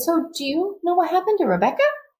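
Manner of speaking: small, very high-pitched little voice. Retelling what the speaker's sister Lillian asked back then, Lillian's little high-pitched voice. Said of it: "in this little kind of high-pitched voice".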